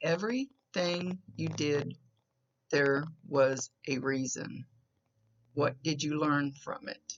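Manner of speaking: slow speech with long gaps. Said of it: "She's kinda saying it slow for me".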